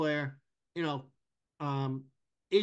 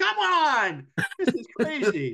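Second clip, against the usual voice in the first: high, loud scream. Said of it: "I actually started screaming".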